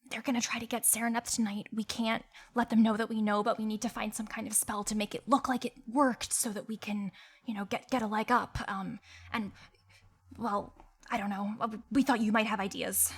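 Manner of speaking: put-on hushed whisper. Playing Mira, sharing a secret plan in another character's ear: whispering in character. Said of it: "Mira's, like, whispering this".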